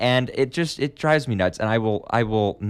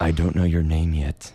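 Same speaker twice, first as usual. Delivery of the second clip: overdone, exaggerated creepiest possible voice; 5 semitones lower than usual. Reading a confession aloud to a friend: creepiest voice possible. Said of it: "I'm going to read this in the creepiest voice possible".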